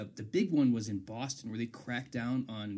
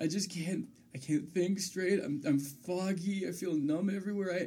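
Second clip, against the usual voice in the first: mock-tearful put-on crying, pitched much higher; 7 semitones higher than usual. Telling how she reacted after taking a Percocet, imitating someone crying. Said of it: "She starts crying, and she goes".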